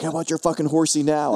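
put-on New York accent. Imitating a friend's taunt over a bourbon choice: put-on New York accent. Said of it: "I can hear him in his New Yorker accent".

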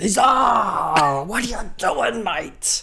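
squeaky, very high put-on voice. Retelling a scene, voicing the man found sitting in the office seat: imitating the man's voice. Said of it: "that's how he spoke".

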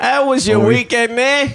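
obnoxious, very high put-on Cockney accent. Asking another speaker about the weekend: put-on cockney accent. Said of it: "a Cockney guy".

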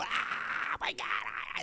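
put-on whispery, breathy, drawn-out, excited childlike squeal. Retelling how a daughter and her friends greet each other: imitating excited kids greeting. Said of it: "they start running up to each other and they go".

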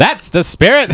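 loud, aggressive, forceful delivery. Showing how the comic talks: Jon Lovitz impression. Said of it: "Like John Lovitz".

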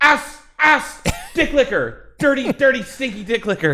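shrieking, very high yelled outburst. Acting out a planned costume that swears at people: mock yelling insults. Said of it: "and just start yelling at people".

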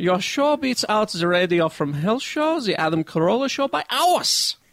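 put-on Northern German accent. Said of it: "I love how you're doing Northern German".

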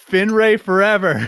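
mock, high-pitched shouted outburst. Retelling what an audience member yelled after a kiss: imitating someone yelling. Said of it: "then she yelled".

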